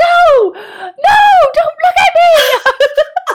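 shrill, high, slow, drawn-out, frantic panicked yell. Retelling waking from a nightmare in a frenzy: imitating her own panicked yelling. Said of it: "I was, like, yelling".

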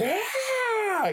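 put-on, long, high-pitched, guttural rage yell. Retelling a scene where Goku is buried by rocks: imitating a guttural yell. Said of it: "guttural yell".

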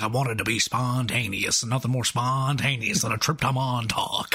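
put-on cartoon rooster voice. Quoting a woman who is being an absolute psycho, in a Foghorn Leghorn voice. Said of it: "Why does she sound like Foghorn Leghorn?".

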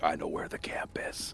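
whispered, in character. Voicing a character who holds up her hand to speak: whispering in character. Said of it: "she whispers".

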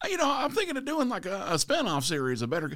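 high, jovial put-on impression voice.

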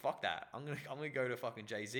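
ordinary talk, nothing marked

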